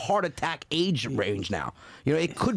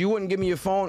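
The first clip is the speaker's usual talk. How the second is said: ordinary delivery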